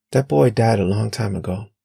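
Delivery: ordinary delivery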